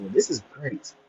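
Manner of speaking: acted, hushed, breathy whisper dripping with sarcasm. Retelling own reaction to a shoe price: retelling own sarcastic remark. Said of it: "I mean the most sarcastic way possible".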